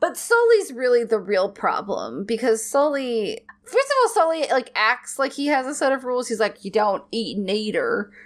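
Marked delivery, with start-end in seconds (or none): 6.6-8.1 put-on unsettling, creepy drawled Southern accent. Describing a character's rules, the speaker quotes Sully in a creepy southern drawl. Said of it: "he is like this really creepy southern drawl".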